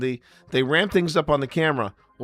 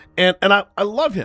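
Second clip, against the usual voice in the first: normal talking voice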